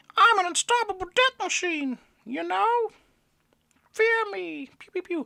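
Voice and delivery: very high, squeaky, silly comic character voice. Reading the quote on a channel widget in a put-on comic voice. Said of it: "that might be the only time you hear me do that voice".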